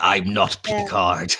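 loud, full-throated bellowing shout. Recalling the scene where Sisko punched him, a fan acts out Sisko bellowing. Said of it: "Sisko just bellowing".

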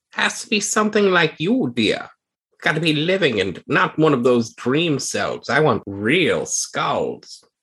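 put-on sneering old granny character voice. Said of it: "She sneers at you".

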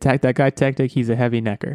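ordinary talk, nothing marked

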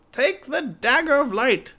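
shrill, very high, very loud bellowing roar. Narrator reads her line to the apprentice, bellowing. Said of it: "she bellowed".

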